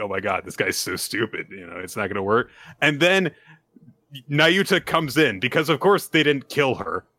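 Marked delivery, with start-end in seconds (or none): 0.0-1.5 put-on laughing, lower and quieter. Speaker retells a scene where Yoshida gives up, imitating Yoshida laughing. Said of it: "just starts, like, laughing".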